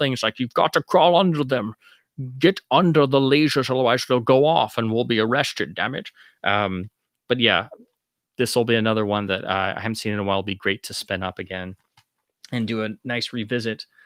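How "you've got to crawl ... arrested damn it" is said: badly done fake Scottish accent. Speaker recalls quoting Bond while sneaking past lasers: bad Connery impression. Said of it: "my uh, you know bad Connery impression".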